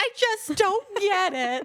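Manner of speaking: put-on weepy crying whine, very high, very slow. Retelling sitting at the table over insurance papers: imitating own past crying.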